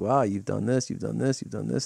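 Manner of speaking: ordinary delivery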